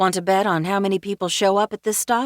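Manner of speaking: ordinary delivery, nothing marked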